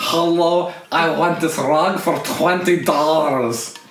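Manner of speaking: loud, slow, drawn-out put-on Persian accent. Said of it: "It sounded very Persian".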